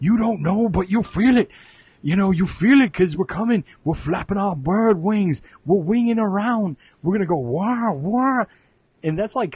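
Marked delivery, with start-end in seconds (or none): 0.0-8.4 hyped-up, loud, pitched-up wrestling-promo style ranting yell. Imitating a wrestling heel's promo, hyped up: imitating a yelling wrestling heel. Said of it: "they would always yell".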